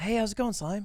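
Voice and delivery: weird-sounding, soft, high little voice. Acting out a red carpet spoof bit: Sykkuno impression. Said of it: "can you do a good Sykkuno impression?".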